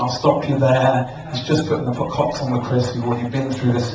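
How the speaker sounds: ordinary talk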